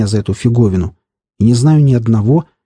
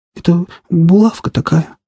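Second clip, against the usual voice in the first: shaky, trembling, scared, high small voice; 6 semitones higher than usual. Narrator reads Sanya's line in a trembling, frightened little voice. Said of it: "дрожащим, испуганным голоском".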